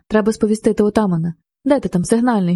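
ordinary delivery, nothing marked

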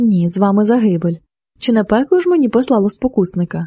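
ordinary delivery

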